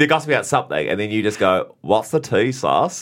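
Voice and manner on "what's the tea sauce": put-on broad, heavy New Zealand accent, laid on thick. Quoting the guest's favourite line from a show: thick Kiwi accent. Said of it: "the thickest Kiwi accent".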